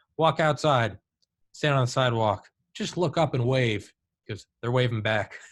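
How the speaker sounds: ordinary talk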